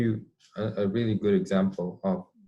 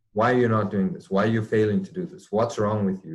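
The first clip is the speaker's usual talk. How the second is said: put-on sharp snapping, louder; 3 dB louder than usual. Describing a parent acting on emotion, acting out the parent snapping at the child. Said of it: "the parent snaps".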